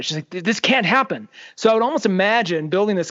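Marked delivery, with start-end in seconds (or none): 0.3-1.3 put-on fury, tripping over the first word. Retelling what a character says while explaining her plan: imitating someone angry. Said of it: "she's angry about it".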